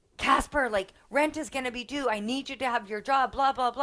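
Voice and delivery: frantic, panic-struck pleading. Retelling pleading with a son to keep his job: imitating own panicked plea. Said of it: "I was so panicked".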